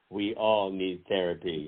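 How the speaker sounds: ordinary delivery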